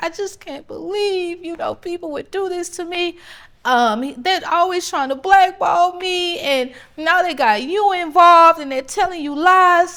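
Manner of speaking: mock wounded, high, tearful, weepy pleading voice. Retelling what he said after being confronted: imitating someone crying. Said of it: "he starts crying".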